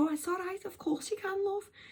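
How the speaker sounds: put-on high-pitched Scouse accent. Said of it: "you're from Liverpool?".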